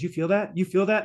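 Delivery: plain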